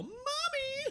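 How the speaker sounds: put-on very high, small child voice yelling. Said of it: "we hear a small voice yell".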